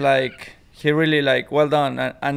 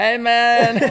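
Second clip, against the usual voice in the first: loud, very high put-on full Mexican accent; 9 semitones higher, 5 dB louder than usual. Showing how someone should approach him: full-on Mexican accent. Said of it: "like with the accent, you know, the full-on Mexican".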